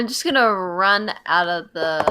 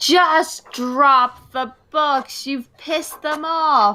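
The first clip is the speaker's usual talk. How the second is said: urgent, high-pitched shout; 8 semitones higher than usual. Yelling at Rowan in character while fleeing the room: yelling at someone. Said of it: "yelling at Rowan".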